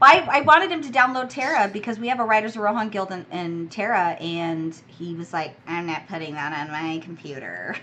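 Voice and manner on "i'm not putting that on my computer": haughty, stuck-up, super snooty tone. Retelling what a friend said about installing a game: imitating someone being snooty. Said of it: "being super snooty".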